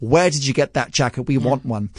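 ordinary talk

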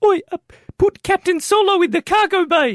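mock New Zealand accent. In a guess-the-character round, a player does an Empire Strikes Back character, Boba Fett with Kiwi accent. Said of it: "Because he's a Kiwi".

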